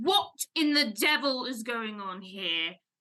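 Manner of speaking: deep, dropped, imposing ship captain voice. Narrating to the players, the ship's captain descends in a booming captain voice. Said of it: "you hear just this booming voice".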